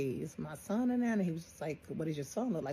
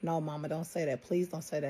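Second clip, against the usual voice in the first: put-on panicked, desperate-sounding voice. Retelling the youngest son's reaction to feared bad news: imitating someone panicking. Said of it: "he just started panicking".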